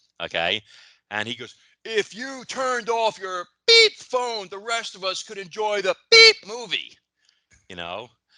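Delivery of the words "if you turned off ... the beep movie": very high, very loud, shrill, top-of-lungs scream. Retelling what a moviegoer screamed in the theater: imitating a man screaming. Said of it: "some guy screams at the top of his lungs".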